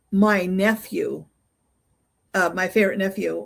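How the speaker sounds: ordinary talk, nothing marked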